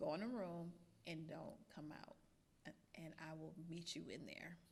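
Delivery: very calm, soft, unruffled delivery. Retelling a father's words to a child after cutting a dress: imitating dad speaking very calmly. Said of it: "I'm saying very calmly".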